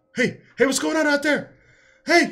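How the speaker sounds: very high, loud shouting, calling out. Retelling a scene where a man yells at the guards; retelling a yell. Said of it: "he's like yelling at the guards".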